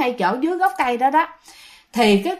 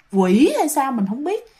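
ordinary delivery

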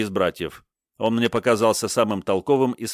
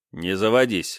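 ordinary delivery

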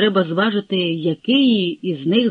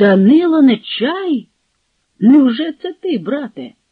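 slow, surprised, amazed exclamation; 4 semitones higher, 4 dB louder than usual. Seeing the Zaporozhian leader arrive at his tent, the host gives a surprised exclamation. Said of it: "він здивовано вигукнув".

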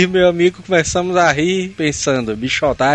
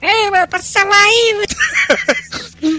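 put-on thin, high-pitched voice. Telling a story about a guy on a bike, imitating his thin voice. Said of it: "um cara com a voz fininha de bike e falou".

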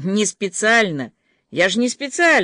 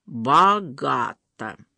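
mocking drawl, lower pitch; 4 semitones lower than usual. Narrator reads a man's usual remark as he enters the living room: mocking drawl. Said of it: "насмешливо протянул".

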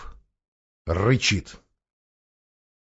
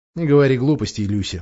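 ordinary delivery

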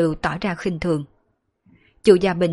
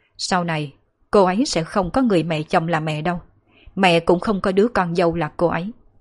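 ordinary delivery

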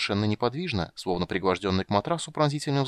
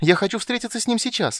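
very high, loud, delighted outcry; 12 semitones higher, 5 dB louder than usual. Hearing that someone is here, the character cries out almost in delight. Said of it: "вскричал Тасс чуть ли не в восторге".

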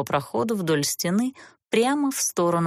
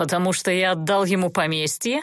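mocking tone. Narrator reads a duke answering a young woman, mocking. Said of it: "насмешливо предположил герцог".

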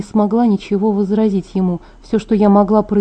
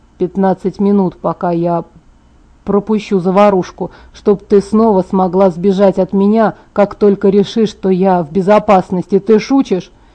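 ordinary delivery

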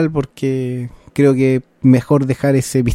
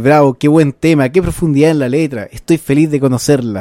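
normal talking voice

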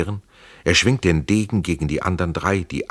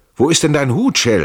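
loud, strong, high-pitched calling out; 9 semitones higher, 6 dB louder than usual. Narrator reads a man calling to another man as a cannon fires: calling out loudly. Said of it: "rief er laut".

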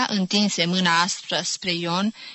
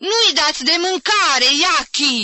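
shrill, enraged, angry scream; 8 semitones higher, 5 dB louder than usual. Jim storms out into the middle of the courtyard and screams. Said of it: "țipă el".

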